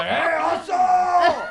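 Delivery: loud, high yelling.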